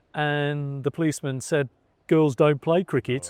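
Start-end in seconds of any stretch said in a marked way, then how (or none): 2.1-3.3 put-on West Midlands Wolverhampton accent. Telling a story about your mum, play the policeman answering her in a put-on Wolverhampton accent. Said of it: "That's my best Wolverhampton accent I can do".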